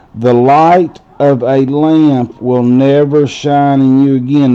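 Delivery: ordinary talk, nothing marked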